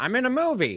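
put-on very high, squeaky elderly lady voice. Retelling an old lady answering her phone in a theater: put-on old woman voice. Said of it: "why do you sound like Audrey Plaza doing her old woman voice?".

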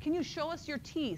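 play-acted, very high-pitched yell. Recalling yelling to a nervous patient with stroke symptoms, retelling own yell. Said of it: "So then I yelled".

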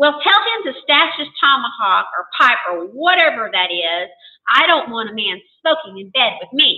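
ordinary delivery, nothing marked

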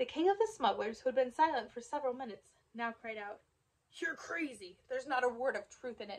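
plain reading voice

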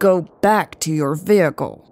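threatening, menacing tone. Reading a story, the narrator voices a man ordering a woman back, threatening tone. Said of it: "Hobbs said in a threatening tone".

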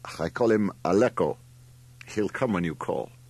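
ordinary talk

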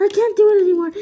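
breathless, out of breath. Stuck on a challenge, out of breath. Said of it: "I'm out of breath".

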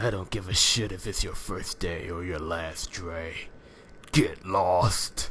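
deep, low, harsh brute voice. Narrating a story, the speaker voices the figure at the door with a Sandor Clegane impression. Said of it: "the great Sandor Clegane impression I just did".

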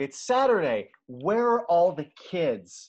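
mock loud, high, drawn-out screaming. Retelling a character's line from a scene: imitating a scream. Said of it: "she's literally screaming".

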